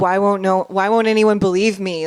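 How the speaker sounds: frustrated, desperate outcry. Speaker recounting a woman's desperation with a cop, imitating her yelling at the cop. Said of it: "she's like yelling at the cop".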